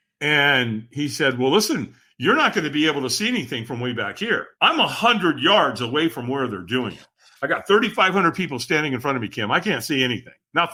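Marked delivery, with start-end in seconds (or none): none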